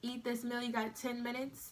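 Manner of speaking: ordinary talk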